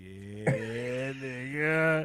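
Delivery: villainous, evil laughter running through the words. Retelling how she answered during a FaceTime call: imitating an evil laugh. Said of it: "she just did the evil laugh".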